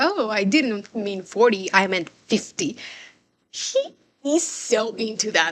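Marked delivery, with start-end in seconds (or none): 0.0-2.8 put-on bragging, boastful show-off tone. Retelling how a character shows off: imitating someone showing off. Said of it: "Ilya is, you know, showing off, like".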